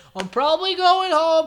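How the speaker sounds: high, loud exasperated rant. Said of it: "She's like".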